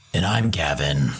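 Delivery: put-on very low, deep old-school movie-trailer announcer voice. A podcast co-host introduces himself at the show's start in an old-school movie trailer voice. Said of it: "Kind of old school movie trailer voice".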